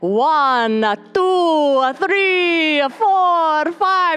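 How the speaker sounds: loud, high put-on vampire accent. Showing how a husband makes fun of his mom's accent, imitating the Count's accent. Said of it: "you totally sound like the count".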